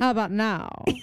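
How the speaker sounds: put-on old-Hollywood transatlantic accent, put on. Retelling doing a little spin and asking again, in a transatlantic accent. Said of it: "In a transatlantic accent".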